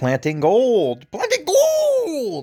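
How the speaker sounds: put-on very high, swooping old prospector voice. Talking about gold on the channel, exclaiming in an old prospector voice. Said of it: "I have to sound like an old prospector".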